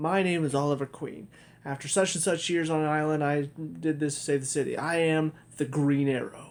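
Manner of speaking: usual speaking voice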